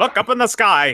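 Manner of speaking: loud, cheesy nineteen-thirties radio announcer voice. Saying they need to work on a voice: cheesy 1930s radio announcer voice. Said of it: "my cheesy, like nineteen thirties radio announcer voice".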